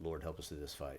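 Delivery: low, soft, very matter-of-fact delivery. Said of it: "very matter-of-factly".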